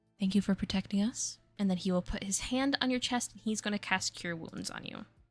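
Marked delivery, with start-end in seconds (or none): 0.2-1.4 very quiet, hushed, faster. Game master voicing the tiefling as he rushes over to Avis, very quiet. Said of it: "he very quietly will just say".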